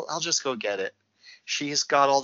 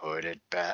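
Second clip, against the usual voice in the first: eerie, ghostly, spooky tone; 7 semitones lower, 6 dB quieter than usual. Retelling a movie scene where a voice warns fishermen: imitating a spooky voice. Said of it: "the spooky voice is like".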